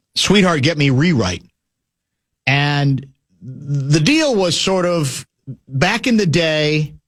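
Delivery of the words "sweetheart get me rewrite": ordinary delivery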